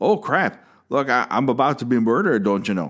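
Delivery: over-the-top, exaggerated, swooping Wisconsin accent. Picking a favorite death, the speaker redoes the victim's cry for help: exaggerated Wisconsin accent. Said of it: "that's my Wisconsin accent".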